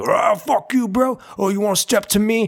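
put-on high, aggressive yelling. Answering what noise they hate, imitating men yelling before a fight. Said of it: "men start yelling".

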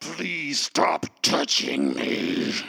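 low, rough words forced through gritted teeth. Retelling what she actually said to someone; retelling words spoken through teeth. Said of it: "speaks through their teeth".

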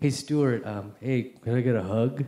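put-on mumbling voice. Retelling asking a friend for a hug: imitating own mumble. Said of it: "I just kind of mumble".

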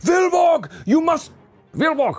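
shrill character-voice shout, pitched way up high. Storyteller voicing Simon calling out to Vilborg, Simon shouting. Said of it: "Simon shouts to Vilborg".

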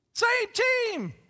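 very high, booming shout. Retelling what a man shouted to kids chasing the ball, shouting like Don Osborne. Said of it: "what Don Osborne used to shout".

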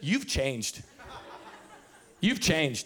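mock disgusted tone. Retelling a reply to his wife about the roadside hot dog: retelling saying it with disgust. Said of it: "I looked at her just with disgust".

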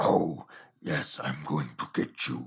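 put-on demon voice. Recapping a scene where he gets a demon face: Night of the Demons demon voice. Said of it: "the demon voice is exactly Night of the Demons".

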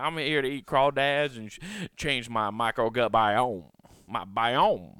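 loud, laid-on, put-on Cajun man accent. Joking about the word microbiome, the speaker plays a cajun man in a cajun accent. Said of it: "Just some Cajun man. He's like".

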